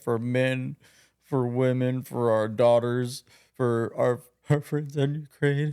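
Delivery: slow, teary, tearful voice. Imitating Jimmy Kimmel crying on national TV: mock tearful Jimmy Kimmel impression. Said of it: "he's got his whole tears start flowing".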